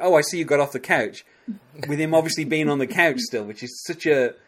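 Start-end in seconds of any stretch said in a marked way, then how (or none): 0.0-1.2 lightly mocking, mildly sarcastic tone. Recounting a tv scene where one character teases another, retelling a sarcastic remark. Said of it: "he says to him kind of sarcastically".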